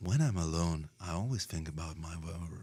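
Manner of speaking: deep radio-announcer style narrator voice. Imitating the narrator on the album who tells the story: imitating the album's narrator. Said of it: "That's a really good impression".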